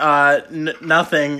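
ordinary delivery

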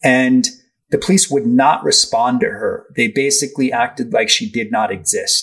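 normal talking voice

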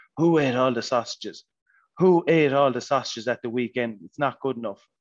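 put-on shouting, berating like a coach. Retelling shouting at the guys during fitness runs: imitating own shouting. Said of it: "I kept shouting at 'em".

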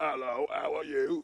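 put-on British accent. Describing kinds of birders, the speaker acts one out: put-on British birder accent. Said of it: "an interpretation of a British birder".

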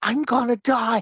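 put-on joyful delivery. Explaining that it's all in the inflection, imitating his joyous delivery. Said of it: "He says it in a very joyous way".

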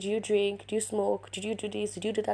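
ordinary talk

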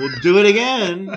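put-on dripping sarcasm. Voicing a reply from a scripture passage: imitating dripping sarcasm. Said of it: "maybe even almost dripping sarcasm".

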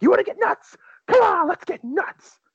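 sudden snapping outburst with pitch shooting up. Retelling a movie scene where Keaton suddenly snaps: imitating Keaton snapping. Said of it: "just snaps".

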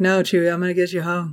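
put-on drowsy, half-asleep, barely awake delivery. Mocking the way the actor delivers the lines, sleepy Han Solo delivery. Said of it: "because he's fucking asleep".

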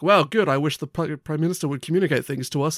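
usual speaking voice

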